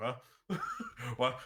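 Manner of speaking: baffled, confused, awkward huh. Voicing a character staring awkwardly at a stranger: awkward confused reply. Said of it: "stare awkwardly, like".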